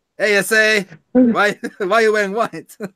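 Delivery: failed put-on accent, sounding Italian. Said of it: "I keep going Italian with this".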